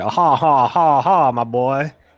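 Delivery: very slow, drawn-out country drawl. Showing a version of the impression: more country Nick Bockwinkel impression. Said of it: "I think of it as a little more country".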